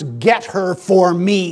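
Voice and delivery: slow speech forced through clenched teeth. Acting out Samson answering his parents: Samson through clenched teeth. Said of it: "through clenched teeth".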